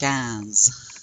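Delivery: nasal vowel in "cans". Showing learners how a word sounds with a nasal vowel: nasal vowel in "cans". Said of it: "give it a nasal accent".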